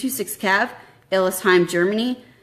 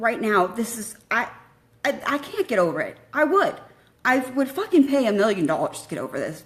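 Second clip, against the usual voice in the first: raw, hurting, upset voice with swooping pitch; 3 semitones higher, 4 dB quieter than usual. Speaking to listeners in the moment, hurting. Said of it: "when I'm hurting like this".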